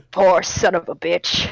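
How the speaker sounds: very low, hard-boiled noir detective narration voice. Examining a body as the lights go down: detective noir voice. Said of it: "starts talking like it's a fucking detective noir case".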